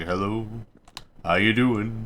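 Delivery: deep morning voice. Up early before work, greeting listeners in a deep morning voice. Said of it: "so my voice is really deep".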